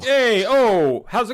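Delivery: put-on Hoboken-style accent. Describing how Hoboken people talk, the speaker demonstrates: Hoboken accent ending with 'hey, oh'. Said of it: "Hoboken just speaking normally but ending every sentence".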